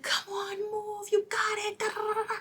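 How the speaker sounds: play-acted, very high, pushy coaching yells like a trainer. Describing a woman pushing women during workouts, imitating her yelling. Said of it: "yelling at them".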